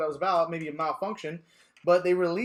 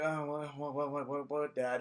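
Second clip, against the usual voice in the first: put-on play-acted startled, frightened young boy voice; 3 semitones lower, 9 dB quieter than usual. Speaker recalls his dad shaking him awake on a school night; retelling a scared wake-up. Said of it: "I thought I was gonna get my ass beat".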